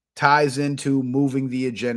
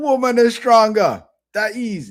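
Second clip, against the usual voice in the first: put-on raised, high Jamaican-accented old-timer voice; 4 semitones higher, 4 dB louder than usual. Retelling a scene from a show, speaking as the older elder character answering a question; Jamaican accent. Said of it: "they got Jamaican accents".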